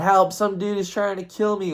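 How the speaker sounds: high, panicked, desperate put-on scream. Recounting being chased through a backyard, the speaker acts it out: retelling a scream for help. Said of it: "I'm screaming for my life, yelling".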